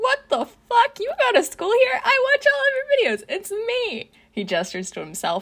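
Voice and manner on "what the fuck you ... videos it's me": very high-pitched, gushing, talking through laughter. A gamer villain recognizes a student whose videos he watches, laughing. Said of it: "He laughs".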